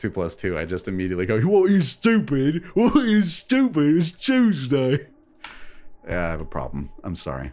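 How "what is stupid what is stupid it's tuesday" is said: really dumb put-on British accent, pitched high. On stream, a player describes a bit he does to others; really dumb british voice. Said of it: "he's got to be British. I was like, I've got to give him that really dumb British voice, / well, he's got the tooth gap there. I was like, he's got to be British. I was like, I've got to give him that".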